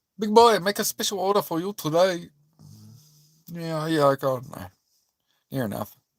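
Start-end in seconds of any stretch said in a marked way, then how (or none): 0.2-2.3 comic, pitched-up put-on Chinese accent. Showing the chinese accent he sometimes does, put-on chinese accent. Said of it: "Sometimes I do the Chinese accent".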